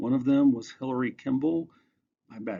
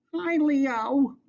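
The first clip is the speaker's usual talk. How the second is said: squeaky little rat voice, very high pitched; 14 semitones higher than usual. Stargirl waves the rat Cinnamon's paw at Leo and greets him, squeaky voice. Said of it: "said in a squeaky voice".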